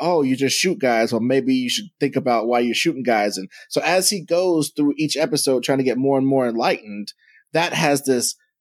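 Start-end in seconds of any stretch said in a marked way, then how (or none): none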